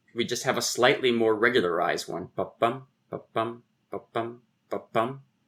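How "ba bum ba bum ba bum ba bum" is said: steady, softer iambic ba-BUM beat. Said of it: "the meter I just played out there".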